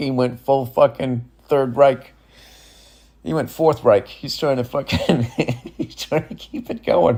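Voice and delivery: speech broken up by laughter. Discussing something terrifying, the speaker keeps talking while laughing. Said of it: "I'm laughing about this shit".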